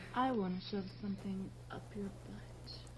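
flat, level monotone on a single note. An actress in a film delivering her line, in a flat monotone. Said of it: "Why did she say that like the little girl from fucking Alien? Like, in the same, like, monotone?".

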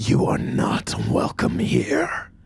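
very high, vile, hissing whisper. Game master voices a presence hissing in a player character's ear: whispered vile hiss. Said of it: "you hear a whispered, vile hiss in your ear".

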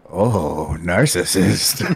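low, creepy, unsettling voice. Retelling what he said to the speaker, imitating a creepy voice. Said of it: "Very creepily, he went".

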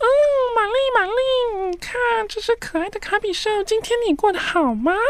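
put-on very high, cutesy, childlike baby doll voice. Speaker shows how he spoke to his girlfriend through a puppet, cutesy baby voice. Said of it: "我都会用娃娃音操控布偶跟女友讲话".

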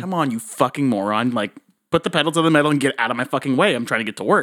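ordinary talk

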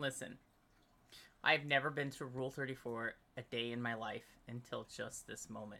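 suppressing laughter. Speaker tries to give a statement for the media, trying to keep a straight face. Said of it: "I'm going to try to say this with a straight face".

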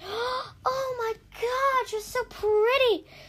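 very high, very slow, drawn-out play-acted gushing. Speaker retells Tsunami's joking reaction: mock-gushing compliment. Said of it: "Tsunami jokingly gushes".

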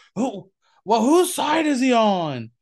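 high, ringside wrestling commentator voice. Recalling the commentary heard over the noise of cheering fans, in a Bobby Heenan voice. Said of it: "you hear Bobby Heenan and that Heenan voice".

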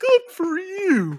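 very high-pitched cartoon bear voice. Voicing the player's bear as it congratulates them: Yogi Bear voice. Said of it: "do that Yogi Bear thing where he goes".

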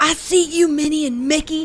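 mock high yell. Retelling how a lady yelled at the speaker and a companion: retelling a yell. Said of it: "She yelled".

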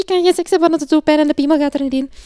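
tiny voice, very high, very loud, rushed. Retelling a visit to their doctor, the speaker quotes themself in a very high, fast voice. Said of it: "in een heel hoog stemmetje heel snel gezegd".

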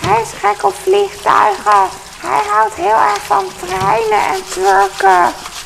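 creaky witch voice.

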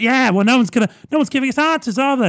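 mock shouting. Recounting a tv argument, the speaker imitates a woman shouting over others. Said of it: "you're shouting over it".

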